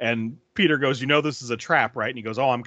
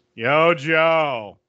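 loud, utterly bored, blasé delivery, one word stretched; 4 semitones higher, 6 dB louder than usual. Retelling a remembered movie line: imitating Heavy Duty's blasé delivery. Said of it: "it's the most blasé delivery".

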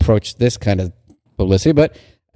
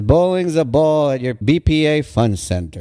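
normal talking voice

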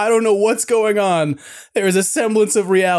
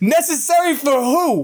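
put-on New York attitude, higher pitch; 5 semitones higher than usual. Retelling own pushback at a swimmer filming underwater: retelling own New Yorker retort. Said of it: "my inner New Yorker came out".

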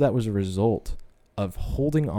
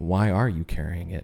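clear, distinct voice; 3 semitones lower than usual. Retelling a voice that asked a question back: imitating a soft, clear voice. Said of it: "a voice just came in softly and clearly".

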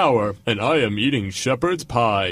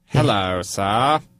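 polished, refined voice, nothing lowly about it; 5 semitones lower than usual. Voicing a peasant approaching the king: sounds like Peter Cook. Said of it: "He sounds like Peter Cook".

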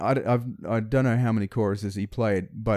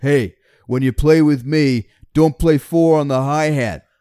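very loud in-your-face bellowing, pitched up; 5 semitones higher, 10 dB louder than usual. Retelling what Bob said right in the speaker's face, imitating Bob bellowing. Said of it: "this bellowing voice in my left ear".

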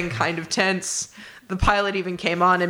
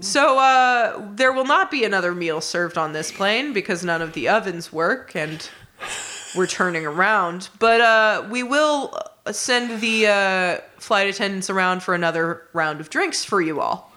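usual speaking voice

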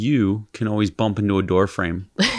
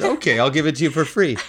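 acted, half-mocking tone; 7 semitones higher than usual. Recounting what they said to a buyer, in an almost mocking reply. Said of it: "mockingly almost".

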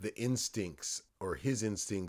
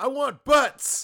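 shrieking, full-blast, very loud high yell; 15 dB louder than usual. Telling a story, acting out the control tower guy: retelling a yell. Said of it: "I'm yelling".

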